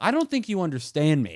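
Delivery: put-on yelling, swooping in pitch. Retelling a phone call refusing entry to the apartment: imitating own yelling.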